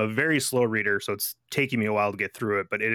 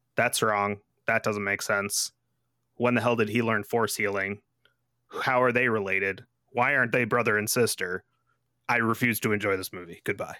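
ordinary talk

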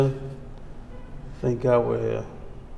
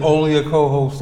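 plain

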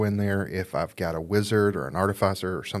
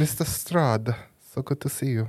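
put-on German accent, evil villain voice; 5 semitones higher than usual. Showing off typical villain voices, in a german villain accent. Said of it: "German is a good villain voice anyways".

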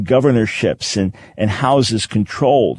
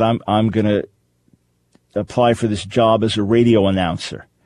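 ordinary talk

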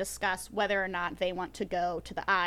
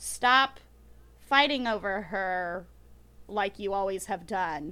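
usual speaking voice

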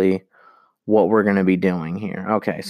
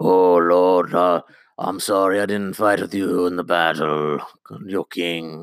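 put-on mocking character voice. A viewer mocks a character they hate: mocking Lord Glover's voice. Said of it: "Him and his stupid voice".

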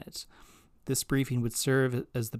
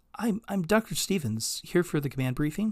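mild, slightly high, somewhat abashed and sheepish; 6 semitones higher than usual. A new scientist introduces herself to an officer at the door, somewhat sheepish. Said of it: "Olivia said somewhat sheepishly".

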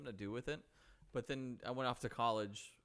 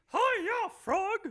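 shrill, very high, loud puppet voice; 14 dB louder than usual. Answering another speaker's prompt to do Miss Piggy: Miss Piggy voice. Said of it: "Miss Piggy?".

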